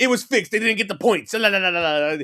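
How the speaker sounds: put-on high, loud, thick old-world Italian accent. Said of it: "he has a thick Italian accent".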